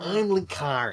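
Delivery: put-on nasal voice. Reading a comic aloud in another voice: Linkara's nasally voice. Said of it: "Linkara's nasally voice".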